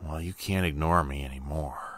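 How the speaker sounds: raspy, rasping voice. Reading a figure in the back seat speaking into the narrator's ear: raspy voice. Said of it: "speaks with his raspy voice in my ear".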